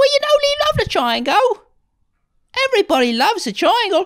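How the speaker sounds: put-on very high, grating-sweet, shrill, swooping, annoying Cockney accent. Acting out a band member in an imagined band scene: annoying Monty Python Cockney accent. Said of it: "a really annoying, like uh, Monty Python Cockney accent".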